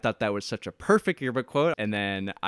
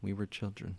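very quiet, deep, low, hushed, reflective, mysterious delivery; 4 semitones lower, 12 dB quieter than usual. Saying a line to seem mysterious, with deep mysterious delivery. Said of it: "If you want to seem mysterious".

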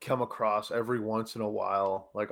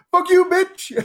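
imitated man yelling, higher and louder; 15 dB louder than usual. Retelling a video of a man yelling at a woman: imitating a man yelling. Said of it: "yelling at this woman".

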